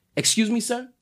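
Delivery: put-on calm politeness. Retelling rolling down the window to answer the driver: imitating own calm reply. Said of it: "you hit him with the calm".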